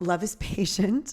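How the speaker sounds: giggling through the words. Quoting a familiar wedding reading to listeners, laughing while speaking. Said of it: "sorry, I'm laughing".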